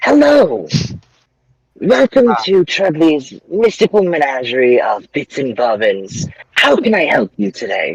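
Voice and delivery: swooping creature voice. As game narrator, the speaker voices the goblin greeting the players: goblin shopkeeper voice. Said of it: "so the Goblin looks at you and he just says".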